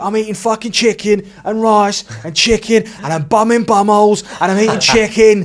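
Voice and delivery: play-acted furious rant, very high, shrill, very loud. Retelling a reply to someone saying it's easy money: imitating an angry rant. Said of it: "he did a rant".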